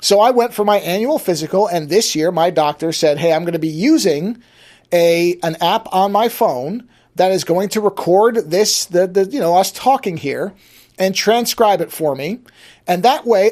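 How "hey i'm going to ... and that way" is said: usual speaking voice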